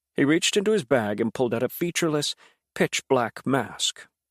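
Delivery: ordinary delivery, nothing marked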